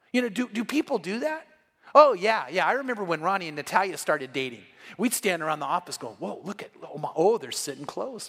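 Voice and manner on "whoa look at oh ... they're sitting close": put-on excitement, lower and quieter. Recalling standing around the office when a couple started dating, mimicking excited office gossip. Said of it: "and we got all excited".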